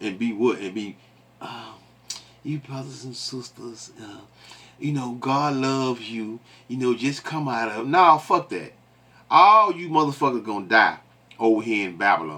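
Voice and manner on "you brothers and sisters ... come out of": soft, gentle, soothing put-on voice. Mocking how others preach in a soft tone: mock soft tone. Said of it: "talk in a tone, a soft tone".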